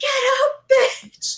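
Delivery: abrupt, piercing, very high shrill yell. Retelling a theater student shouting at a movie screen: imitating someone shouting. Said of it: "suddenly just shouts at the screen".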